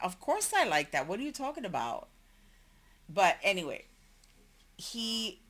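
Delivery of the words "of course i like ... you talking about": normal talking voice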